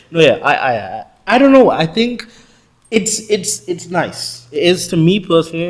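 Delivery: high, loud excitement. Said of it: "I do get very excited".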